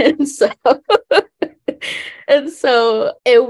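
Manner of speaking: high, loud laughing while talking.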